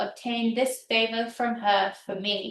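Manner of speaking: ordinary talk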